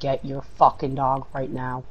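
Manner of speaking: ordinary talk, nothing marked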